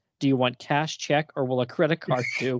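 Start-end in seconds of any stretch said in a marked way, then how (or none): none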